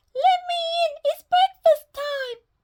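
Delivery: squeaky, very high put-on little-girl voice. Reading a story, the narrator voices the wolf at Granny's door, squeaky voice. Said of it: "squeaked the wolf".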